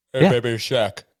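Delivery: loud, belted, weird celebrity voice. Listing celebrity friends, then doing a quick Shaq impression. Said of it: "That was my Shaq impersonation".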